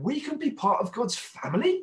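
put-on amazed, astonished, high, slow delivery. Retelling a son's question in the car: imitating Isaac's astonishment. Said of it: "you could just hear this kind of astonishment in his voice".

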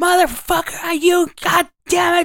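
put-on screaming, high-pitched. Recounting a bum on the opposite corner swearing, retelling a bum screaming. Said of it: "just screaming".

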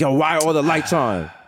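put-on old West Indian man voice. Joking about becoming the old west indian father, complaining: old west indian father voice. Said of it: "coming in like the old West Indian father".

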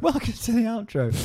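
laughing while speaking. Repeating the welcome to the outro after the other speaker, giggling while talking. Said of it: "Why are you giggling?".

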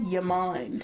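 put-on thick Australian accent. Retelling an actor's slip into his accent: imitating Cody Fern's Australian accent. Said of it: "he said it so Australian".

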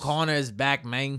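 put-on Mexican accent. Speaker attempting a Terminator line, put-on Mexican accent. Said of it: "That turned into like a Mexican guy".

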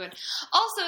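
forceful, intense delivery.

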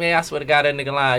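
ordinary talk

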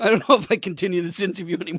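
words broken up by hard laughter while talking. Trying to continue an interview: laughing while talking. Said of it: "I'm laughing too hard".

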